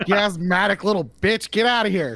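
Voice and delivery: fed-up scolding. Speaker finds the cat made the noise and yells at it: yelling at the cat. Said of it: "I yelled at the cat again".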